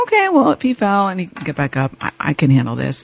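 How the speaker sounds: ordinary talk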